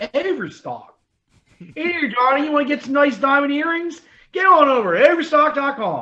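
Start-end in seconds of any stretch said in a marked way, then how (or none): 1.7-6.0 put-on loud, high Baltimore ad-announcer voice. Imitating an Overstock ad in a Baltimore accent: put-on Baltimore accent. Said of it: "Elizabeth Banks on Thirty Rock".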